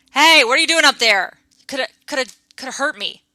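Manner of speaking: angry voice. Narrating an unseen voice reacting after a stone clatters down below, angry voice. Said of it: "a an angry voice go".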